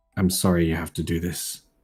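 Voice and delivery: low, stoic, deeply sincere deadpan, no show. Voicing a character apologizing to Lionel for what he must do: deadpan and very sincere. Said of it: "but deadpan, almost earnestly, and very sincerely".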